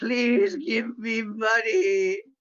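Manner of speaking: high-pitched begging through sobs. A player's character falls to their knees asking someone for money, sobbing plea. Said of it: "fall to my knees sobbing and say".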